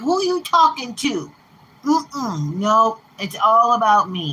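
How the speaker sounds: slow, jealous, possessive little pet voice. Voicing the pet Doce reacting to hearing "aw": voicing Doce the pet. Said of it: "He'd come up to me with his little tail like".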